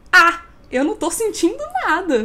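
loud, scornful, dismissive, heavy mocking tone. Speaker retelling how a woman answered questions about the pandemic, imitating her mocking tone. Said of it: "No maior tom de deboche".

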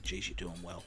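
quiet, soft, hushed stage half-whisper. Retelling what the child nurse half-whispers to him: imitating a half-whisper. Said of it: "whispers to me".

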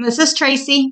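talking with mouth full. Introducing yourself at the start of the podcast, with a mouth full of cookies. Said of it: "With a mouthful of cookies".

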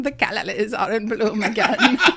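put-on quavering, old-hollywood film actress voice. Teasing the other speaker's shaky voice, the speaker does a shaky Katharine Hepburn impression. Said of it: "a little Katharine Hepburn showed up".

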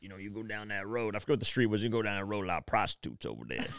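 voice worn rough with heavy smoker's rasp. Retelling the advice a man gave while telling about his life: imitating a heavy smoker's voice. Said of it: "I feel like he'd smoked a million cigarettes".

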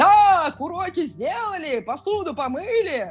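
very slow, high, drawn-out barked yell. Retelling how he surfaces from his devices and yells at the kids, retelling a yell. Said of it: "начинает орать".

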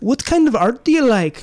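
very high, horrible fake Irish accent. Quoting a science teacher from art class, in a bad Irish accent. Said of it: "that's a horrible Irish accent".

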